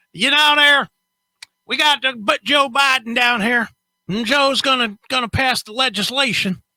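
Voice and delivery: high-pitched put-on country hillbilly accent. Guessing how a redneck news podcast sounds: imitating a hillbilly accent. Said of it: "one guy that does the hillbilly accent".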